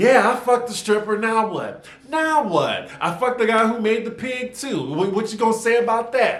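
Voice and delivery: play-acted unbothered sarcastic tone, pitched high. Retelling a clash at a dinner table: imitating Portia's sarcasm. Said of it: "Portia pulls a classic Nene with the sarcasm".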